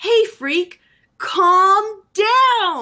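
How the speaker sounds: loud, very slow, high-pitched drawn-out shout. Describing the game, the player retells the lady yelling at a ghoul, imitating the lady's shout. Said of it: "the lady shouts".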